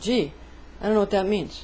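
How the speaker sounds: ordinary delivery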